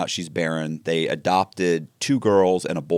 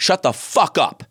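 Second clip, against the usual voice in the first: mock-furious, higher pitch; 3 semitones higher than usual. Telling a friend a story, a man acts out what he said to someone, retelling a furious outburst. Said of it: "I was just I was furious with him".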